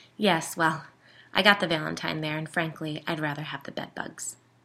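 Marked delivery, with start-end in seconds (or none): none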